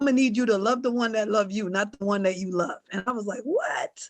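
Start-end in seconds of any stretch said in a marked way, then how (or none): 0.0-2.8 put-on Jamaican grandmother accent. Quoting their grandmother's advice the way she says it: grandmother's jamaican accent. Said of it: "I can always hear her saying it in her Jamaican accent".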